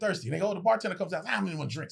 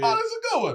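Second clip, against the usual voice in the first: put-on amused voice, pitched higher; 3 dB louder than usual. Retelling a comedian in the audience reacting to the set: imitating Mark Curry laughing. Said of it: "I can hear him saying shit like".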